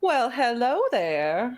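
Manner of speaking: dainty, high, swooping put-on Southern belle accent. Doing someone's voice again, a dainty Southern belle voice. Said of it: "Wasn't it like a dainty Southern belle?".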